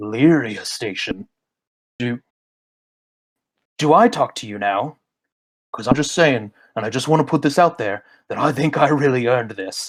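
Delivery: low, deep grating voice grinding over static. A voice cuts in over a station's radio transmission: deep grating voice. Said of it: "a deep voice starts to grate over the transmission".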